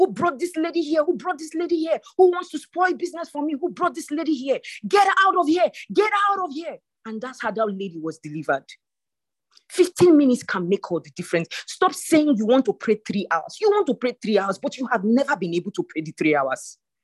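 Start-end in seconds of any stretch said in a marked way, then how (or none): 0.0-6.8 put-on man voice, high-pitched screaming. Retelling what happened when it got to her turn: imitating a man screaming. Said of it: "the man started screaming".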